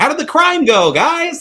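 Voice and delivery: really loud, very high-pitched holler. Retelling what a character asks after leaving a bar: imitating someone talking really loud. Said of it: "really loud".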